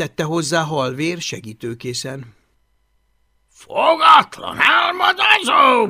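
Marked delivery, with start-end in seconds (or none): 3.5-5.9 sudden, high, bursting blurted-out outburst. After hearing the tiny dragon called small but wild, bursting out. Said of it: "fakadt ki Bill hangos".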